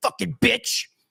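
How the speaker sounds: instant high, sudden, nasty angry snap. Describing how a rejected guy reacts, mock angry snap. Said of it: "you snap immediately".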